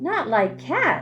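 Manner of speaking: loud, shrill, impassioned, passionate outburst. Narrator reads the mouse's reply to Alice in a shrill, passionate voice. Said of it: "cried the mouse in a shrill, passionate voice".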